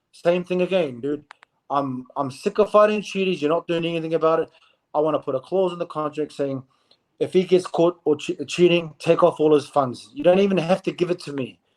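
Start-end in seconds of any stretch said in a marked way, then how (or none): none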